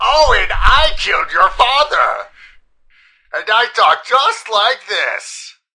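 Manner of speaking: very loud, slow, swooping, booming villain voice. Joking about a villain storming into a house: put-on Count Doom voice. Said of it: "cause Count Doom to storm into your house and be like".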